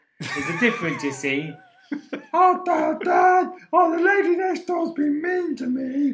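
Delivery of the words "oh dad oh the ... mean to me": very high, slow put-on dog voice. Speaker voices a dog complaining to its owner, in a put-on dog voice. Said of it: "that dog's like".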